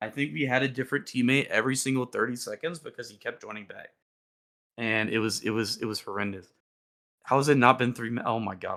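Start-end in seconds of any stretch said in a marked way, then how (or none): 7.2-8.2 too fast, rushed, rambling speech. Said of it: "I'm talking too fast".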